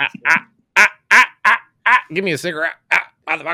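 loud comedian-style delivery. Doing a comedian impression for the other speakers: Dave Chappelle impression. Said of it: "That was my Dave Chappelle res-, impression".

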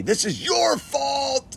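play-acted very high, enraged, furious bellowing. Retelling a man bellowing at the speaker, mock-bellowing, super mad. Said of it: "he gets super mad at me".

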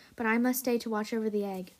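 plain reading voice

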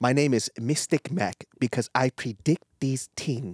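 attempted Jamaican-sounding accent. Boasting about a fight prediction, attempted Jamaican-sounding accent. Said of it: "Is that Jamaican?".

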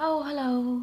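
very gentle, very soft, high voice. Quoting a woman whose voice you heard, imitating her very gentle voice. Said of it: "most gentle sounding voice I've ever heard".

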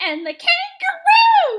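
very high, squeaky voice jump mid-word. Show the annoying thing her voice does, in a Baby Bop voice with a weird jump. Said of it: "Some weird fucking jump in her voice".

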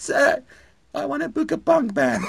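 put-on tiny, very high young voice. Retelling phoning venues as a very tiny teenager, say the line in a puny teenage voice. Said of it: "it's this puny voice over the phone".

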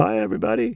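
put-on very high, squeaky cartoon-style teen voice. Voiceover podcast co-host greeting listeners in a Simpsons clerk voice. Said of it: "it's like the clerks on The Simpsons".

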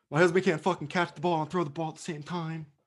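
upset ranting, pitched a little high. Imitating Gisele Bündchen after a Super Bowl loss, imitating Gisele Bündchen. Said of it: "Giselle, after that Super Bowl loss".

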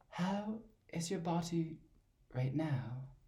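high, very slow, odd questioning tune. Mimicking how they always talk: high-pitched questioning voice. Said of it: "that weird voice that's kind of high-pitched and it's always asking a bit of a question".

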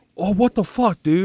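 put-on high, mad griping outburst. Retelling a man in line at a movie theater getting mad, mimicking him. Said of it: "he got all like mad about it".

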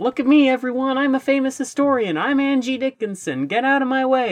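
very high-pitched, shrill shouting. Acting out the funny man shouting while running around, retelling a shout. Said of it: "So he just shouts".

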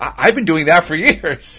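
put-on caught-off-guard surprise. Retelling own reply on hearing what a walking meditation is: retelling own surprised reply. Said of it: "I said it with surprise".

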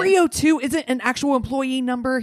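high, angry, irate shouting. Retelling a caller demanding an employee number: imitating someone screaming. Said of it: "He's screaming it".

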